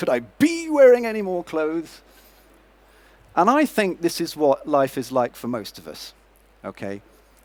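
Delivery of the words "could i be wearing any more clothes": put-on higher-pitched New York accent. Retelling how Joey puts on all the clothes, doing a Chandler impression. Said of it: "he also mimics Chandler's voice, his New York voice".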